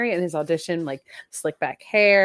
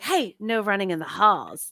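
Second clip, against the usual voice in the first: sincere, creepy, eerie, slightly higher voice; 3 semitones higher than usual. Comparing how a character sounds, doing his line in a little higher-pitched voice. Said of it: "A little higher".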